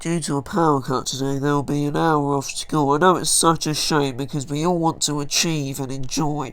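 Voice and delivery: nasal voice, as if the nose is pinched shut. Imitating how the school principals sound when they talk: nasal, nose-held voice. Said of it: "sound like they're holding their noses when they talk. I'm not exaggerating, they literally sound like this".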